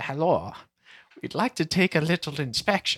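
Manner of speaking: put-on odd, vaguely French accent. Acting out a soldier at the door in a hypothetical scenario; weird French-like accent. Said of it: "What's that accent?".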